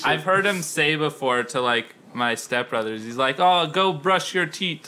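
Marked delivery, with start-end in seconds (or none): 3.4-4.9 bad, unconvincing Trinidadian accent. Retelling what he says to your stepbrothers, put on a bad Trinidadian accent. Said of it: "Bad accent".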